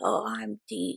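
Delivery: very quiet fake voice, barely above a murmur. Mocking people who act like Sam and Dean: deep Dean voice. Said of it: "where they try to talk really deep like this".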